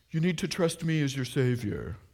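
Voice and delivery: fake, put-on British accent. Wondering why Jesus didn't phrase it differently, the speaker voices Jesus in fake British accent. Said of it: "that was my fake British accent".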